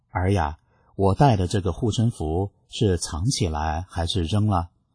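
ordinary talk

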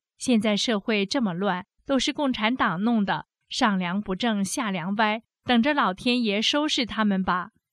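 ordinary talk

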